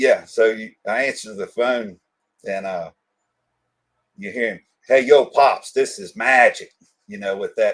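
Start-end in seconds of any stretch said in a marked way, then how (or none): 4.9-6.7 loud, drawn-out, put-on Brooklyn accent. Retelling a phone call from Magic: imitating Magic's Brooklyn accent. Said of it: "with that New York, that real Brooklyn-y accent".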